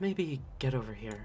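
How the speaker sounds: hushed, very soft, quiet half-whisper. Voicing an invisible character urging commoners to move away: half-whispering. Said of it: "just kind of whisper".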